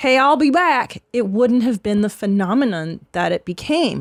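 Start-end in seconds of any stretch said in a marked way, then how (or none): 0.0-1.0 plain, everyday American accent, slow. Showing how the line would sound said like an American: plain American delivery. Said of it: "said that like an American".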